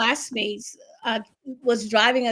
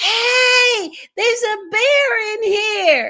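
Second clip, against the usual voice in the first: put-on boy's high, shrill, loud yell, "hey" drawn out; 11 semitones higher, 7 dB louder than usual. Retelling how a boy jumped up on the sofa: imitating a boy yelling. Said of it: "he yelled".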